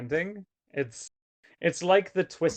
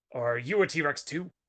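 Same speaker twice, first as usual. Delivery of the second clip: rough, gravelly voice; 3 dB quieter than usual. Reading a story aloud, voicing a T-Rex's question: gravelly voice. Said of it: "Truck asked in a gravelly voice".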